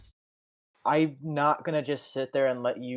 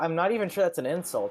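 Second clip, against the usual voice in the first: normal talking voice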